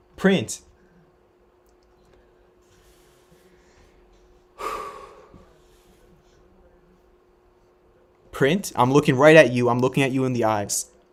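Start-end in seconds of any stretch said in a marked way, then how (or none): 0.2-9.7 loud, thrilled, hyped-up excited screaming. Thanking a donor for twelve fifty subs, screaming excitedly. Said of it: "I'm sorry if I'm screaming in your ears".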